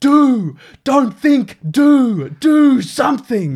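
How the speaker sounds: put-on very high, very slow, drawn-out coach's shout. Retelling a coach's halftime speech: imitating a coach yelling. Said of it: "he's just yelling at the top of his head".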